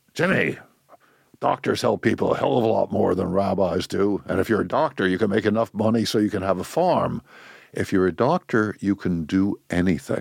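gentle, kindly, fatherly tone. Retelling the father's advice about becoming a doctor: imitating father's way of talking. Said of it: "he talked like this".

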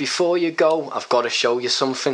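put-on Scouse accent. Retelling what he said as the speaker said goodbye, in a Liverpudlian accent. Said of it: "we always talked to one another in Liverpudlian accents".

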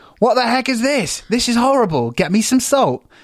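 rude, snappish tone. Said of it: "the man snaps".

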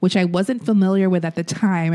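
ordinary delivery

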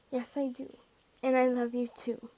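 ordinary talk

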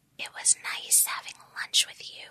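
put-on whisper. Retelling a movie character's line at lunch: imitating a whisper. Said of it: "why is she whispering?".

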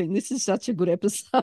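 words spilling out through laughter. Apologizing to listeners mid-episode: laughing while talking. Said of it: "I can't stop laughing".

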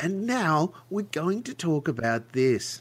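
high, slow evening news anchor voice. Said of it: "talking to right down to the camera on the evening news kind of voice".

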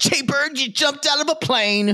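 motherly voice, very high-pitched. Imagining a mother's reaction to jumping out of a plane: imitating mother's voice. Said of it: "I would hear my mother's voice going".

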